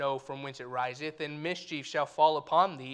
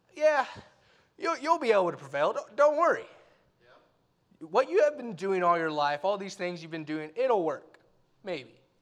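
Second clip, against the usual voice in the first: quick, put-on, taunting, sarcastic tone; 3 semitones higher than usual. Imagining what God might say in reply, imitating a mocking tone. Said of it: "I could see God saying in a mocking tone".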